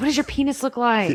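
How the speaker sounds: put-on mild yell. Retelling a character confronting an actor at his car: imitating someone yelling. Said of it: "yelling at him".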